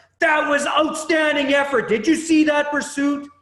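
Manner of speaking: mock very loud, high, shrill, angry-sounding holler. A coach recalls yelling at a kid on the field, retelling a mad-sounding yell. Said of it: "it's a mad yelling voice".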